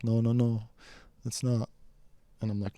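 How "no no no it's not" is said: put-on crying, pleading voice. Retelling how a friend in the car started crying: imitating someone crying. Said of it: "She just starts crying, like".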